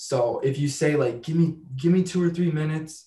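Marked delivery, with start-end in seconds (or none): 1.2-3.1 needy, desperate, begging, pleading tone. Showing how asking for two or three minutes can sound: desperate-sounding request. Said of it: "that can sound desperate".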